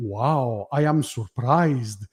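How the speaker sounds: put-on slow, Greek-accented speech. Retelling Dad's reaction to the final reveal, the speaker does Dad's Greek accent. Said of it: "the the Greek accent".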